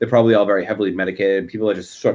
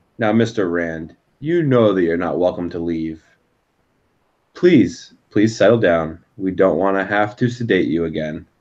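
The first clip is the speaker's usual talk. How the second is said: put-on calm, soothing doctor voice, slower; 3 semitones lower than usual. Game master voices an unseen doctor addressing a locked-in mister rand, calming doctor voice. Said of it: "he's just trying to get you to uh".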